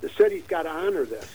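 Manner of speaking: ordinary talk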